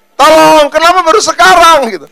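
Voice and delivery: shrill, very loud, high-pitched shouted cry. Answering how one would shout when cornered: mock shout. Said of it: "Teriaknya gimana?".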